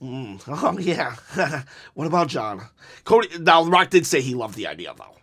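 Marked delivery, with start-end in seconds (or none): 0.0-2.6 pointed, sweetly snide, passive-aggressive musing tone. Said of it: "passive-aggressive things".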